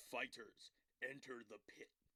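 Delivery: very quiet, deep, hushed fight-announcer voice. Recalling that the Mortal Kombat announcer was there, doing the Mortal Kombat announcer voice. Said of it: "literally like the announcer voice".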